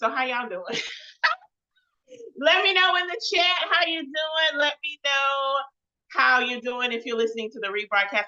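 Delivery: hollering, loud and high. Greeting listeners in the chat and on the rebroadcast, hollering. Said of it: "I feel like I'm hollering".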